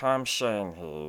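low, deep commercial radio pitchman voice. Imitating a commercial spokesman whose voice the speaker hates: Tom Shane impression. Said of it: "that guy, I hate his voice".

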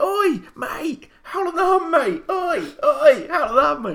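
high, drawn-out, loud calling shout. Retelling calling out to someone walking past in a queue, retelling a shout. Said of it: "And I shouted".

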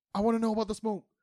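very high, loud, blurted shout. Retelling a scene where Percy is interrupted: imitating Keyleth shouting. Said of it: "Kiki just shouts".

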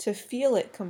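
plain reading voice

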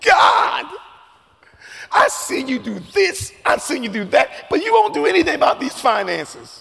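swooping, high crying voice. Retelling crying to God while driving away: imitating his own past crying.

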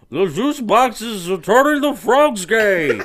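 bad cartoon voice, very high, loud and slow. Attempting a quick impression of a cartoon character: Zoidberg voice. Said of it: "I don't think that was a very good impression of Zoidberg".

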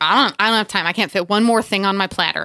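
plain

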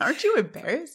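high-pitched mock scolding voice.

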